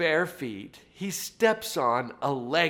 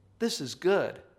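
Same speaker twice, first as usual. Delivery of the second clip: light, lilting voice lifting the words; 4 semitones higher than usual. Speaker showing listeners how to say a practice phrase, light lilting voice. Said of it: "do it like I did".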